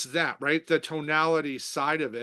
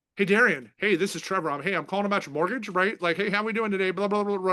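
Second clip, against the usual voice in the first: fast, rushed, run-on chatter with no pauses; 4 semitones higher than usual. Demonstrating a bad opening to a call about a mortgage, in a rambling word dump. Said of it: "It just d- diarrhea dump on him".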